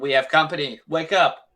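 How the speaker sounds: very loud, urgent shouting voice. Turning back to the group in character and warning them: shouting a warning. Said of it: "I turn back to the group and I shout".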